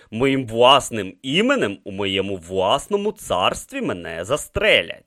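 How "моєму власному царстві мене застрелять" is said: plain reading voice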